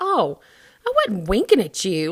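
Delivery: kind of grossed-out, disgusted, swooping, dismissive tone. Retelling a drive-through mix-up, imitating own disgusted tone. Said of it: "I said it, like, kinda disgusted".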